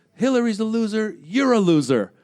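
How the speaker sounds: play-acted, high-pitched, jeering, shouted yell. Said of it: "There's a guy in a bow tie yelling".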